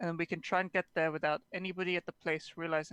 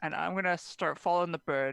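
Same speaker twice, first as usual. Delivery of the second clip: usual speaking voice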